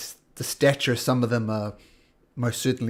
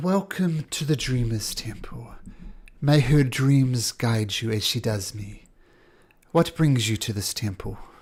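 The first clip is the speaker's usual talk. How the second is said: put-on female character voice. Narrating a scene to a player, voicing a human-looking figure in a female voice. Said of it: "she says in a female voice".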